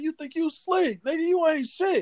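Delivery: put-on screaming, very high-pitched. Retelling how she reacted at the meetup: imitating her screaming. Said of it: "she started screaming".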